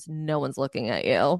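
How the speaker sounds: mimicked muttering under the breath. Retelling what a man said as a couple walked into a party, muttering under his breath. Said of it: "He just mutters under his breath".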